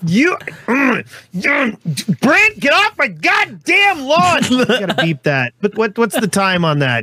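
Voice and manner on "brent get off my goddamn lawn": play-acted, very high-pitched hollering yell. Acting out the line another speaker just set up: mock yelling to get off the lawn. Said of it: "this is where he starts yelling for y'all all to get off his lawn".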